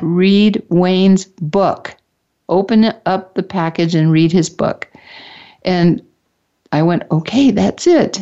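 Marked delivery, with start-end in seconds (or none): none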